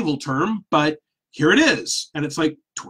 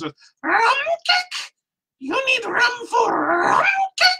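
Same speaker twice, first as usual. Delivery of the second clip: tiny, very high-pitched, squeaky voice. Retelling what a woman said coming around the corner, in a high squeaky voice. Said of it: "high-pitched, squeaky voice say".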